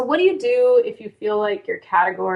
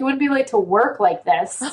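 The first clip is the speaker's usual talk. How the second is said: dry, dead-serious, sarcastic jab; 3 semitones higher than usual. Retelling what a friend said about being late: imitating Fawn being serious. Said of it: "And she was so serious".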